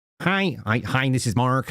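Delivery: put-on slow Filipino accent. Speaker imitates a T-Mobile call-center agent, in a Filipino call-center accent. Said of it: "it's a Philippine voice".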